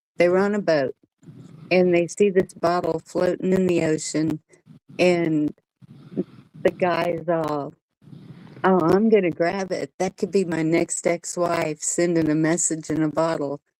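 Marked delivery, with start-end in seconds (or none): none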